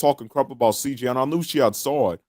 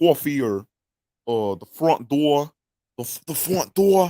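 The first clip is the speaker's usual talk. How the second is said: tentative put-on Boston accent. Trying to work a boston accent into a character voice: boston accent. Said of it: "that Boston accent".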